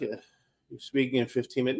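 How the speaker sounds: mock very soft, very quiet, half-asleep sleepy murmur. Retelling a six a.m. call from an assistant: imitating a very sleepy voice. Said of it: "in a very sleepy voice".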